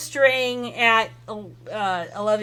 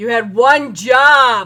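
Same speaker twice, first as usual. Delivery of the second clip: booming, resounding witch voice, "job" drawn out; 7 dB louder than usual. A Bruja comes down the stairs into the restaurant, in a booming Bruja voice. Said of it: "that booming, almost oh god, uh, voice of a Bruja going".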